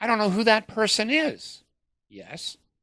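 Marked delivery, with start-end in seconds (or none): 0.0-1.6 high-pitched protesting tone. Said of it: "I go".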